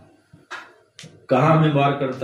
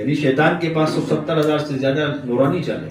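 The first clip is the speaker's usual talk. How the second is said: ordinary delivery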